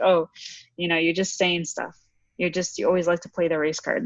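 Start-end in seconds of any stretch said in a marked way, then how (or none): none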